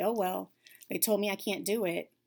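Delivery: ordinary delivery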